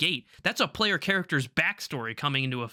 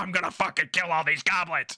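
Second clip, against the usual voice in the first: mock-furious ranting voice; 2 semitones higher than usual. Retelling a tabletop player's reaction to his friends dying, imitating an angry player. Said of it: "he's fucking pissed".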